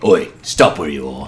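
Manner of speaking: very low undead zombie pirate voice. Voicing a figure who stops the party in a dark tunnel: zombie pirate voice. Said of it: "you see a fucking zombie pirate talking to you".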